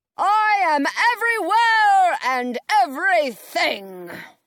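grand, booming, loud, high wizard voice. The wizard answers the Wicked Witch from the crowd, booming. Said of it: "the wizard booms".

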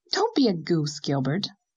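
ordinary talk

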